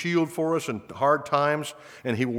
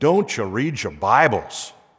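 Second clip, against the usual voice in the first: put-on raised, louder Scottish accent; 4 semitones lower, 5 dB louder than usual. Quoting a man who leaned over his podium after silence, the speaker uses John Mitchell's Scottish accent. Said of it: "say in his Scottish accent".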